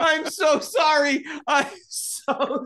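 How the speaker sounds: very high, drawn out, talking through laughter. Apologizing to another speaker for laughing at their story: laughing while talking. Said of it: "I'm so genuinely sorry for laughing".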